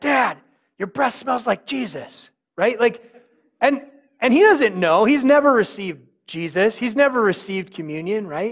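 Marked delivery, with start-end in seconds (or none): 0.0-2.3 put-on loud child-like stage whisper. Retelling his five-year-old son whispering during quiet communion: imitating a child whispering. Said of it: "'Cause he's, like, whispering".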